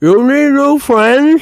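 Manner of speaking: very loud, shrill speech with mouth full. Voicing Phil in an acted scene; Phil talking with mouth full. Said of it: "With a mouthful of food".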